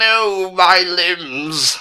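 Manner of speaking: high, wailing cry of pain.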